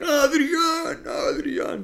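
put-on very high, dazed, punch-drunk boxer's call. Calling out a name as a guess-the-voice impression: Rocky punch-drunk voice. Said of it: "dando mucho miedo".

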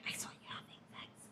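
spooky whisper. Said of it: "you're more likely to be like".

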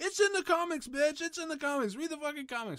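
play-acted shrill shouting. Speaking to comic book fans, acting out how they yell; imitating fans yelling. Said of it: "really yelling at us".

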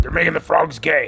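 gravelly, creaky acted voice. Showing how easy his voice is to do: Alex Jones impression. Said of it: "it's easy to do his voice".

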